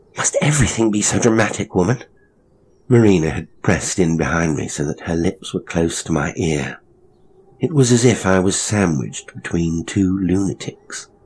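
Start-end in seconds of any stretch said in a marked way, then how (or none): 0.2-2.0 muttering, higher pitch. The narrator, within inches of a woman's face, speaks to her: muttering. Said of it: "I muttered when I was within inches".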